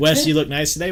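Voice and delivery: ordinary talk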